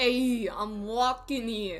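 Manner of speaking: put-on New York street accent. Trying a character out in new york, in a new york accent. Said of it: "let's try New York".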